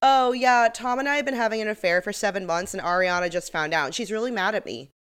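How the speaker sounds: put-on offhand, casual, matter-of-fact, nonchalant delivery. Retelling Raquel confessing an affair: imitating Raquel, nonchalant. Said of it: "just nonchalantly goes".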